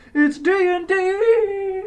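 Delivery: loud voice crack, very high, D stretched. Player in a D and D game answering the others; voice cracking. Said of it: "voice crack".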